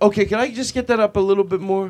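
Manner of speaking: mock, extra-sweet, overly polite tone. Acting out asking a sound guy for more volume: imitating a super nice request. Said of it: "even if you're super nice".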